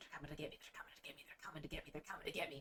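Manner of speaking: hushed, very quiet, low whispered muttering, repeated. Game narrator voicing an old man dragged in by the ear, muttering really low. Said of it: "he's muttering like really low".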